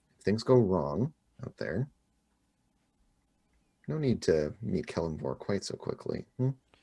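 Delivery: hushed whisper. A player's character grabs a woman's arm and speaks into her ear: whispering in her ear. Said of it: "whisper in her ear".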